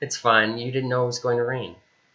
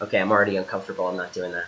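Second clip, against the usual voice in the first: plain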